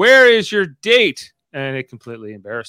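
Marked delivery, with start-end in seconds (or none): 0.0-1.3 really loud, drawn-out, pitched-up voice. Retelling a wedding-dinner story, imitating asking really loudly. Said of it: "him really loudly".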